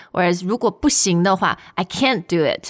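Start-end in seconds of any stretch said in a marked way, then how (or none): 1.7-2.7 "can't" hit hard, heavily emphasized. Contrasting stressed and unstressed phrasing: stress on can't. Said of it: "It's more emphasized".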